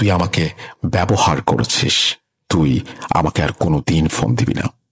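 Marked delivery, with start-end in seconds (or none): none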